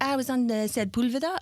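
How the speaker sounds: put-on fabulous French accent, slow and unhurried. Retelling what a french friend said, imitating a french accent. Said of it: "fabulous French accent".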